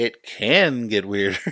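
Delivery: poorly executed slow bellowing. Imitating a comedian's line from the movie: John Mulaney impression. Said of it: "That's my horrible, worst John Mulaney impression".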